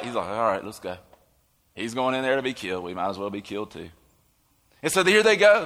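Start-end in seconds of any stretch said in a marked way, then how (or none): 0.3-3.9 put-on despair, much lower pitch, much quieter. Acting out what Thomas says, imitating Thomas's resigned despair. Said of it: "not triumphal".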